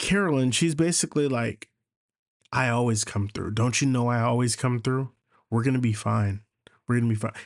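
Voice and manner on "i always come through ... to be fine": confident, self-assured, calming, reassuring tone. Retelling a TV episode's ending, imitating Carolyn's confident reassurance. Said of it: "she said it with such confidence".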